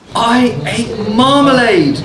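rather proud, lifted tone. Narrator reading a story, the bear answers Mr. Brown rather proudly. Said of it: "it said rather proudly".

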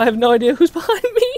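scared, panicked, very high, loud frightened cry. Gamer alone in a firefight, calling out for help, scared. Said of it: "I'm scared".

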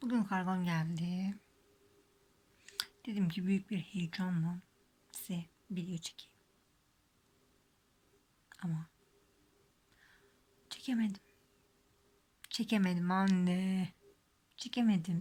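low-volume hushed speech. Recording a late-night video while everyone else is asleep, speaking quietly. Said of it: "için çok yüksek sesle konuşamıyorum".

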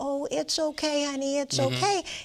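high, sweet soothing voice. Showing how people talk to an anxious pet, in a sweet voice. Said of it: "in that sweet voice".

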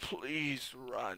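very quiet, soft, gurgling, rasping creature voice. Narrator voicing the creature speaking to them, in a gurgly, raspy voice. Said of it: "It spoke in a gurgly, graspy voice".

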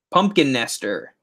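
ordinary talk, nothing marked

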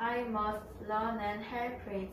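ordinary delivery

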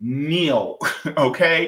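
local-sounding New Jersey accent. Speaker repeats a word the way their Jersey people say it, New Jersey accent. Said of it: "I'm gonna say it like my people from Jersey".

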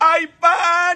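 high-pitched, loud vendor-style shout.

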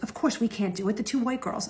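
soft, hushed whisper, as if to someone close. Retelling what another student ran over and whispered during class, imitating a whisper. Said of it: "she comes running over to me and she whispers".

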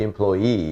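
employee, final EE stressed and drawn out slowly.

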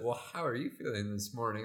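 patronizing, condescending, talking-down tone. Retelling Caitlin's question in the kitchen next morning: imitating Caitlin, condescending tone. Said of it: "that condescending look".

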